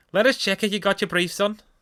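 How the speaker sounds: put-on Liverpool Scouse accent. Reading out a listener's story of what a woman said: Scouse accent. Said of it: "couldn't do a Scouse accent".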